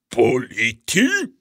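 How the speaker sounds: aghast, appalled, horrified cry. Mr. troll reacts to what his wife has read about humans: horrified. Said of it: "disse il signor troll inorridito".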